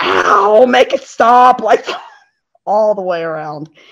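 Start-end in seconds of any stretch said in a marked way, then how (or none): 0.0-1.6 mock high-pitched scream, a cry of pain. Recalling an awful roller coaster ride, retelling a scream. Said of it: "We were just screaming".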